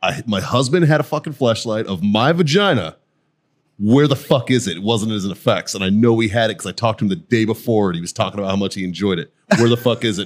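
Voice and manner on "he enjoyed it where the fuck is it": normal talking voice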